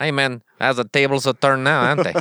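fake, put-on Mexican accent. Imagining having to flee to Mexico, playing a Mexican man in a put-on Mexican accent. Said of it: "How the heck do I do a Mexican?".

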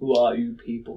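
otherworldly spirit voice beyond language. A summoned soul questions the people who called it up, in a voice that transcends language. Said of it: "says in sort of a voice that transcends language".

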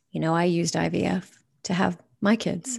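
softly spoken, hushed, voice dropped low. Retelling what a friend said after moving closer: imitating a lowered voice. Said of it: "lowered her voice and said".

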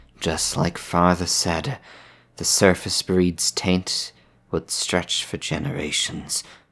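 muttering quietly under breath, grumbling. Voicing a character at the nav controls: muttering under his breath. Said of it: "will mutter under his breath".

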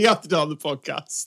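ordinary talk

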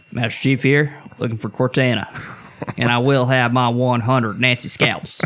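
put-on faint Southern accent, announcer style. Joking that the show gives Master Chief a Southern accent: Master Chief with slight Southern accent. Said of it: "he's got, like, a, like, a Southern accent a little bit".

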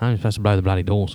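plain

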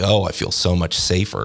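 put-on sarcastic tone. Speaker retelling what people said in an email, quoting people sarcastically.

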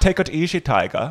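lecherous put-on Dutch accent. Asked to show an accent, the speaker does a skateboarder line in a horny Dutch Goldmember accent. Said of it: "I'm more doing a Dutch, a horny Dutch gold member".

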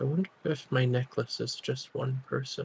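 soft, hushed half-whisper. Voicing a character looking out at shore, musing aloud: half-whispering in character. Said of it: "he's gonna whisper".

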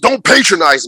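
high-pitched, screamed outburst. Retelling a comic scene where he screams at her: imitating someone screaming. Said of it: "he literally screams".

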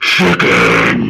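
very deep, rough, low announcer voice. Recalling a power-up in a fighting game: imitating the Tekken voice. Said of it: "the Tekken voice would go".

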